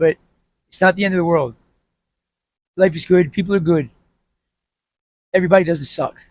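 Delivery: emotional, voice catching, choking up. Speaker encouraging listeners to keep their head up, getting emotional. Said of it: "I'm getting emotional talking about it".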